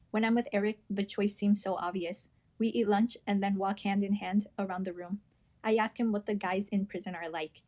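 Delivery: plain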